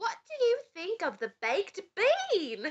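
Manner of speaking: put-on Cockney accent, slow, "bean" stretched out. Reminded to ask the question in the Cockney accent first, the speaker uses a Cockney accent. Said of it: "You got to do it in the Cockney accent first".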